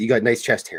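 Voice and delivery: ordinary talk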